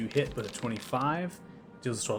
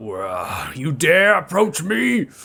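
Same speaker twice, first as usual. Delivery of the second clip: very loud, booming, drawn-out monster yell; 5 semitones higher, 13 dB louder than usual. Voicing a creature that looks down at the climber, yelling.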